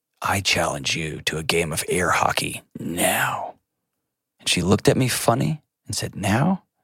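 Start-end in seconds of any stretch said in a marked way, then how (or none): 0.2-3.6 quiet, low, slow, hushed challenging tone. A parent recounts challenging a daughter at bedtime, retelling a quiet challenge. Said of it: "in a quiet voice".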